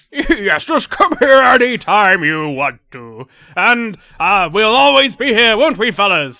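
very loud, booming, slow, hearty, jolly dwarf voice. Game master voicing a dwarf speaking to the players, big loud jolly dwarf. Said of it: "Big, loud, jolly dwarf".

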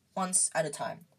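ordinary delivery

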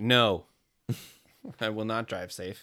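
slow, mock, sarcastic, snarky talking back. Retelling a reply to a mom's "drive safe": snarky retort. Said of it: "When I'm feeling snarky, I'll be like".

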